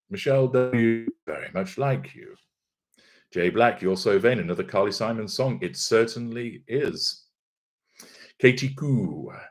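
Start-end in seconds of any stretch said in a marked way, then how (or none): none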